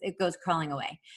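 ordinary delivery

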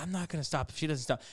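low, hushed half-whisper under the breath. Retelling what they half-whispered to their girlfriend during the speeches, half-whispering. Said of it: "I'm like whispering to my girlfriend".

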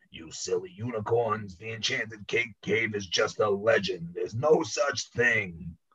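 cranky, grumpy, grouchy scolding voice. Reading a story aloud, voicing a signpost answering unicorns: grumpy voice. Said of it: "in a grumpy voice".

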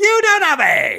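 unhinged, shrill screaming, very high and loud. Retelling how a woman in a straw hat kept at it for minutes, imitating a woman yelling like crazy. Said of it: "She just yelled".

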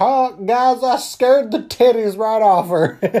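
put-on hillbilly voice, high and slow drawl. Retelling what a man said after scaring the girls, in a hillbilly voice. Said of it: "they're not hillbillies by any means, but I'm going to use that voice".

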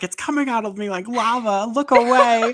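shrill, very high, shrieking screaming outburst. Retelling a chaotic scene, quoting a sick woman: imitating someone screaming. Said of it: "And she's screaming".

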